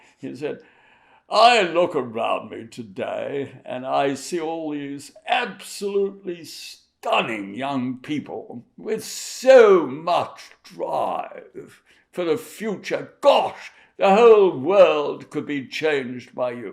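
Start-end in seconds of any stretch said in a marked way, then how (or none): 1.3-16.7 loud, projecting, very British way of speaking. The Duke gives a speech to young people in Sydney, Duke of Edinburgh, very British voice. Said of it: "in very British voice, like this".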